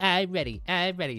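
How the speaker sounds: high, squeaky cartoonish voice. Imitating own childhood voice, sounding like SpongeBob. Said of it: "You sound like SpongeBob".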